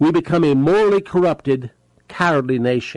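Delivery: very slow, clear and deliberate, each word careful. A speaker addressing listeners about America, very slow and clear. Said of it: "I'm saying it very clearly, very slowly".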